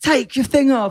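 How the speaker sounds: put-on very high-pitched, urgent yelled shout. Retelling what others shouted during a challenge: imitating someone shouting. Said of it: "they're shouting".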